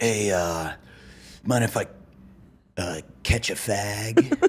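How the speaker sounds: dropped, casual tone. Acting out a twelve-year-old asking for a cigarette: imitating a lowered voice. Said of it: "lower your voice and be like".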